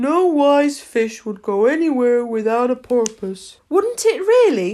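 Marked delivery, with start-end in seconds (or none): 3.7-4.7 high, astonished, surprised tone. Narrator reads Alice replying to the Mock Turtle, in a great tone of surprise. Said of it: "in a great tone of surprise".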